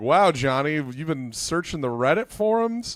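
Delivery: put-on mocking, teasing tone through a cackle. Retelling a friend's mocking reply: imitating a friend cackling. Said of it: "Sam starts cackling".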